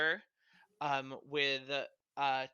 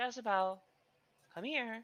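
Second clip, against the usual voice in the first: calm, higher-pitched feminine voice; 8 semitones higher than usual. Game narrator voices an unseen character calling a creature over: calm feminine voice. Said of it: "calm, feminine voice".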